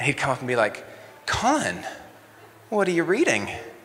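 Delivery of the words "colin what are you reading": acted, high, swooping, loving and worried voice. Recalling a youth leader coming up to him on a missions trip: mock loving, concerned voice. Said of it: "in a very loving but concerned voice".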